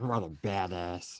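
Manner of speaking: low, muttered under the breath. Voicing a character reacting to a rival's swagger: muttered under his breath. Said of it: "under his breath".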